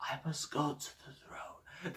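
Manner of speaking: barely audible, low, near-whispered mumble. Showing how badly he talks so nobody hears him well, imitating someone talking really low. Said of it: "He talks really low like this".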